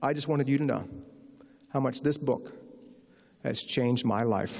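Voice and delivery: ordinary talk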